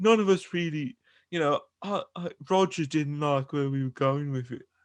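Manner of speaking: halting put-on voice, hemming and hawing. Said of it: "that's a very good [name] impersonation".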